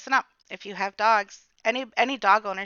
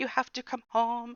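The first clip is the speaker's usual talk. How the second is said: put-on hysterical sobbing, quieter; 2 semitones higher, 5 dB quieter than usual. Retelling a call to the husband after a dog bite: imitating hysterical crying. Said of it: "trying to talk through hiccups almost, like hiccups of crying".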